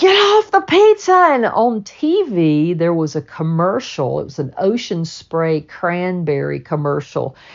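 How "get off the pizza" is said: mock scream, high-pitched, shrill and loud. Retelling seeing the kitty in the middle of the pizza: retelling own scream. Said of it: "And I screamed".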